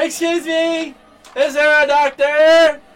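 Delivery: loud, high shout. Calling across a loud room for a doctor: yelling in character. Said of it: "I'm gonna yell".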